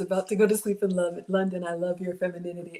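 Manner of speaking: ordinary delivery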